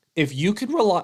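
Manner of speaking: voice breaks, cracking high mid-phrase. Discussing the Leafs' line combinations when the voice suddenly cracks. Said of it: "whoa, voice crack".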